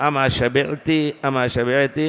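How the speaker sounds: ordinary delivery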